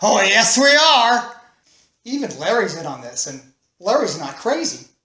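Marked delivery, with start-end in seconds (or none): 0.0-1.4 mock very slow, stretched-out loud yell. Retelling a friend's reply in the car: imitating someone yelling. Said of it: "Dave yells out".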